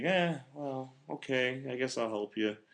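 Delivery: soft, emotionless robot voice. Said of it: "Andrew McCarthy's just like".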